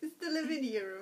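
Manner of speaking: put-on thick Italian accent. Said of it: "He's got a really thick accent".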